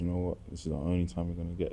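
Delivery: soft, calm motherly voice with no edge.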